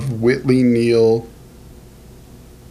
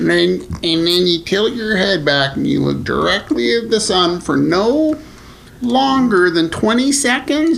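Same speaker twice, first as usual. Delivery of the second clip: high, slow, silly put-on voice. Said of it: "what, what voice was that".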